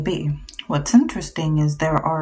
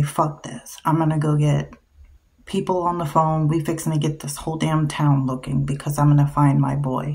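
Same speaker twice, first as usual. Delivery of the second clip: ordinary talk, nothing marked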